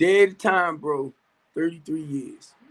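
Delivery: plain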